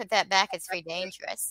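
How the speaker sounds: usual speaking voice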